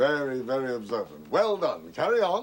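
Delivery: put-on slight old-fashioned English accent, swooping tune. Answering in a who-am-I guessing game, with a hint of English accent. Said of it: "Now a hint of an English accent".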